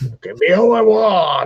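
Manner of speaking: mock barbarian voice, belted out.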